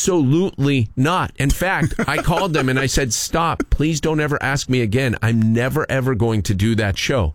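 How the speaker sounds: plain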